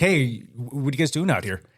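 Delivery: normal talking voice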